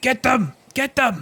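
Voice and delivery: very high, commanding, yelled delivery. Game narrator voicing Yimik commanding his side to attack, Yimik yelling orders. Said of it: "He yells".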